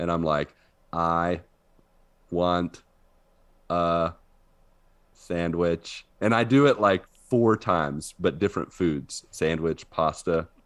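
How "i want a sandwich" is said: slow robot voice, long pauses between words. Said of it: "the robot ... is doing one word at a time".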